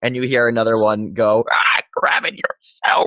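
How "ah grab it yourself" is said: croaking scratchy voice, higher, slower. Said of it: "you're doing the Smog the Dragon voice".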